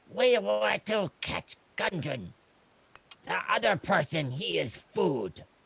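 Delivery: very high, slow, drawn-out goblin voice. Voicing a captured goblin who answers the adventurers: goblin voice. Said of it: "The goblin looks up at you and says".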